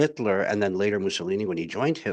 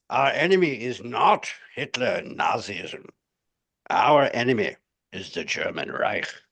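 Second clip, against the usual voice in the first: slow, deliberate, measured pronouncement. Quoting a wartime memo as an impression: Churchill impression.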